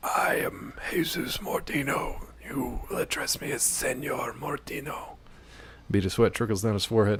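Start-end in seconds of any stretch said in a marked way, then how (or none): 0.0-5.9 very slow, hushed, breathy, rasping whisper. Narrator voicing Jesus Mortino introducing himself, rasping voice. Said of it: "Man speaks in a rasping voice".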